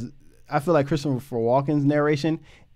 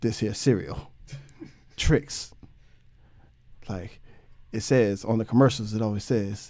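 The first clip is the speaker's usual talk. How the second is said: deep, low, dead-flat monotone; 5 semitones lower, 4 dB quieter than usual. Quoting a film scene, imitating Liam Neeson's monotone voice. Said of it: "that same monotone voice".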